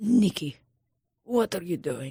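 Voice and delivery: put-on Russian-accented voice. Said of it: "she talks, she's like".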